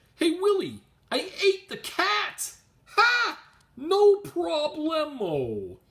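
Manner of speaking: bad, very high, loud, very slow, swooping voice. Describing a comic's cover, doing a quick Alf impression. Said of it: "That's my Alf impression".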